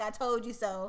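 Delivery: normal talking voice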